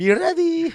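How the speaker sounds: put-on heavy, thick Egyptian accent, very high and very loud. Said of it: "she has an accent".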